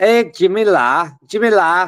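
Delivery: poor put-on Scouse accent. Trying a Scouse voice after saying it sounds Manc: bad Scouse accent. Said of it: "If I do a Scouse voice, it sounds like a Manc voice".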